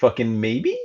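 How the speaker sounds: slight upward lift at the end of maybe. Suggesting a name for a middle ground, slight rise on maybe. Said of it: "A little uh, upward inflection".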